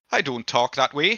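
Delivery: put-on voice of a scruffy local. Voicing Butler during the Ludo game: Butler voice. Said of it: "Is that what he sounds like?".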